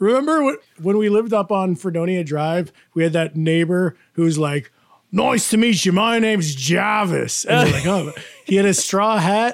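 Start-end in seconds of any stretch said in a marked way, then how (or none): 5.1-7.4 put-on easygoing, casual, relaxed Australian accent. Recalling a former neighbor introducing himself, imitating Jarvis's Australian accent. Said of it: "this Jarvis Aussie guy".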